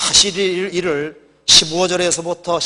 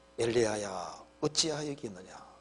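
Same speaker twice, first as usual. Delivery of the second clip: gentlest, most caring, tender, kind voice; 6 semitones lower, 16 dB quieter than usual. Retelling a bible scene, voicing a line in a put-on tender, kind voice. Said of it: "가장 자상한 목소리로".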